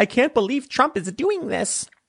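high-pitched, freaking-out outburst. Mocking a politician's complaint: imitating Hillary Clinton freaking out. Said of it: "she doesn't talk like that".

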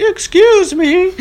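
put-on high elderly woman's voice. Retelling a woman in her late eighties asking directions, in an old woman's voice. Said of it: "That was a good impression of her".

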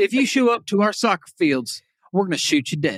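tough, no-nonsense sheriff voice. Speaking as Grady Judd, warning people not to show up, do a Grady Judd impression. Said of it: "I'm Grady Judd".

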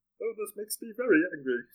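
very high, very loud, squealing cartoon voice. Naming cartoon characters with friends, then doing one: Marvin the Martian voice. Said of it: "That's a really good Marvin Martian".

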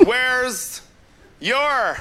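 slow, drawn-out delivery. Retelling a 14-year-old daughter asking about a chore list, imitating slowed-down speech. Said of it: "She slowed it down like I really needed".

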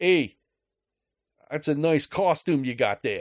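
put-on Boston accent. Retelling what the kid behind the gas station register said, in a put-on boston accent. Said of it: "Boston accent".

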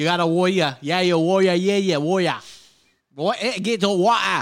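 attempted Australian accent. Attempting an australian accent after saying it's hard: bad australian accent. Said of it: "I can't fucking barely do that one".

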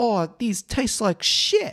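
put-on very high, slow, drawn-out Australian accent. Recalling the first time you heard her swear in her accent, imitating her swearing in Australian accent. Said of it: "swear in an Australian accent".

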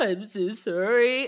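mock sniffling, sobbing, high-pitched, blubbering voice. Imitating someone blubbering and sniffling through an apology: imitating blubbering apology. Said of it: "shaking, and then he's like, sniffling".

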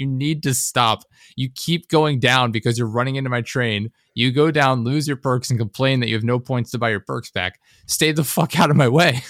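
put-on furious, angry yelled rant. Retelling telling a teammate off during a game: imitating own yelling. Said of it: "I literally sitting there yelling".

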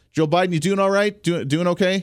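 mean-spirited, taunting, teasing tone. Asking the president if he's doing all right: mocking, mean. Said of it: "I'm being very mean".

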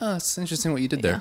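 acted, soft, very high, sugary passive-aggressive tone. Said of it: "nice, but kinda like".

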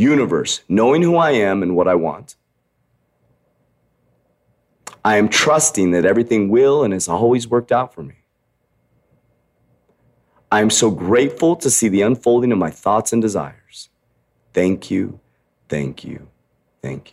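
heartfelt, passionate, ardent, fervent delivery. Leading listeners through a manifestation they repeat after him: with passion. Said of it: "Say it with passion".

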